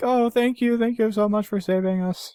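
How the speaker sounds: high, gushing, mock-thankful marine voice. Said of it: "And they're like".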